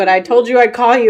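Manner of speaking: ordinary talk, nothing marked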